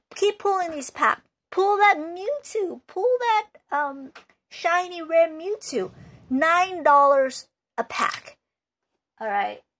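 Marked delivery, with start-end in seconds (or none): 0.2-8.4 really high, squeaky put-on voice. Imitating a bad seller urging buyers to keep opening packs, in a really high voice. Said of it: "That's just my really high voice".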